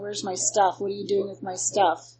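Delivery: ordinary delivery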